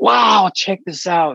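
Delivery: acted-out shrill, very high, thrilled, excited shriek. Remembering a teacher coming in excited, imitating a teacher screaming excitedly. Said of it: "start screaming, going".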